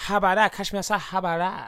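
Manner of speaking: put-on Chinese grandmother voice. Repeating a catchphrase in a put-on voice: sounding like a Chinese nana in a shop. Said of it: "I sound like a Chinese nana".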